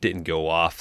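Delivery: plain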